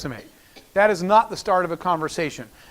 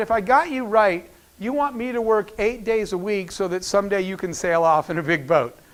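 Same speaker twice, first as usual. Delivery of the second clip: usual speaking voice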